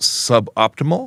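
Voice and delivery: slow, drawn-out "suboptimal".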